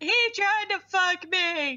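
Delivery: acted crying, high, tearful, words dragged out very slowly. Retelling a dream where a girl comes home upset: imitating someone crying. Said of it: "she's, like, crying".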